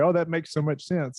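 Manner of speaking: ordinary talk, nothing marked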